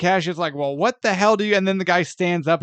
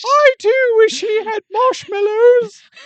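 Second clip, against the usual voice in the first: very high cartoon squeak in a put-on British accent; 6 dB louder than usual. Voicing the other speaker's alternate-dimension double, British Mickey Mouse voice. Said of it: "Why am I British?".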